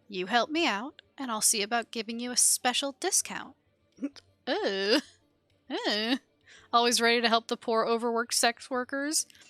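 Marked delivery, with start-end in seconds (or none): 0.1-3.5 low, hushed, confidential voice. A woman running an enterprise nods at you and offers a deal, lowered voice. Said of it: "lowers her voice".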